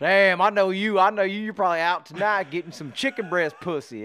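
loud teasing voice. Retelling a New Year's phone call from Wild Bill: Wild Bill impression. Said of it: "He's like".

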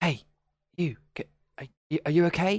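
quiet whispering. Player's character approaches a figure drawing on the wall, slightly hushed whisper. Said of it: "kind of slightly hushed and whispered".

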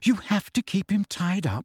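weak, barely-there, faint, high voice. Noticing the ropes around the trees, she remarks faintly. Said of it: "said Hermione faintly".

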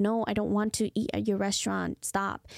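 ordinary talk

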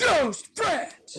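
high, muted, muffled yell. Repeating the quote's ending in impression: imitating Nicolas Cage's muted yell. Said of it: "a muted yell".

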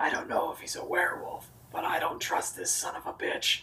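very quiet whisper. A player's character whispers to companions while moving toward the doors, whispering.

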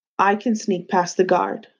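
plain reading voice

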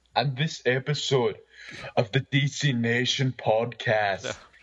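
low, strained, throat-straining put-on character voice. Announce the podcast episode after a co-host asks what you're doing today, in a put-on voice that hurts. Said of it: "Are you hurting your voice?".

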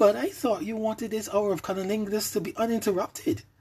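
very high, sugary sweet innocent tone. The narrator answers a woman who asked to catch her breath, sweetly, innocently. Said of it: "I answered sweetly, innocently".

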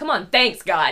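sarcastic, ironic, meaning the opposite. Describing how hard thanking God feels while mourning, acting out sarcastic thanks.

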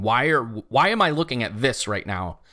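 ordinary talk

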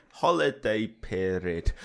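funny, silly voice, slow and loud.

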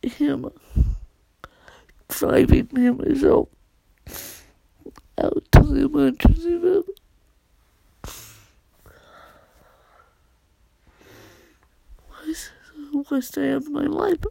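bawling while speaking. Apologizing for being a bawling mess, crying while talking. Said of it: "I'm sorry to be a bawling mess".

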